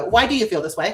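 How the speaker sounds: harsh, accusing, judgmental, critical tone. Demonstrating how the inner critic asks the same question, in a judgmental inner-critic tone. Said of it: "the first tone of the voice is the person who's the inner judge".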